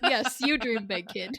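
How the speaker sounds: normal talking voice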